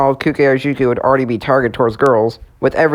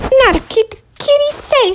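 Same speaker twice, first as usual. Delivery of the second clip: put-on very high, cute cartoon girl voice. As the first Powerpuff Girls add-on arrives, speak in the Bubbles voice. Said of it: "I'm doing the voice of Bubbles".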